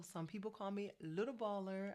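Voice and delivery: ordinary delivery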